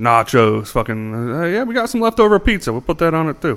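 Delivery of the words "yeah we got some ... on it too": put-on high-pitched Italian accent. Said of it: "I actually gave him an Italian accent".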